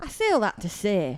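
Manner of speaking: exaggerated, hammed-up, over-the-top Yorkshire accent. Offering to ham it up, saying it in an exaggerated Yorkshire accent. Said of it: "your funny little Yorkshire accent ... Should I ham it up for a second?".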